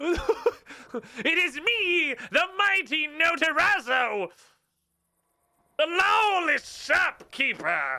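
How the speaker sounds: very high goblin wizard voice, every word drawn out. The shopkeeper character introduces himself, in a Notarazzo goblin wizard voice. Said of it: "Why you sound like a fucking goblin wizard?".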